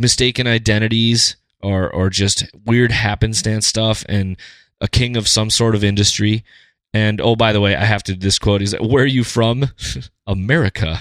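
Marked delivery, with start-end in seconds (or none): 8.8-11.0 put-on heavy British accent, laid on thick. Retelling what he asked her, in his incredibly thick British accent. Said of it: "with his incredibly incredibly thick British accent".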